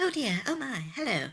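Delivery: prissy, genteel, prim put-on voice, high and soft. Describing how all the elves talk, in a mock prim and proper voice. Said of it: "like very prim and proper".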